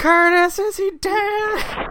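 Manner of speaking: piercing, very loud, very slow, high drawn-out yell. Retelling what she yelled at the scene, yelling as Connie. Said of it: "And she just yelled".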